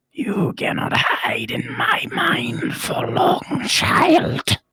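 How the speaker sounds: rasping, raspy voice. Narrator voices an unseen speaker in the darkness addressing the player: raspy voice from the darkness. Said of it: "you hear this kind of raspy voice come out from the darkness".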